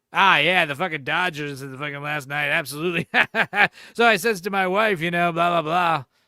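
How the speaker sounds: mimicked loud chatty talk. Retelling how barbers chat to each other over a customer: imitating a barber talking really loud. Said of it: "They're talking really loud to the guy over here".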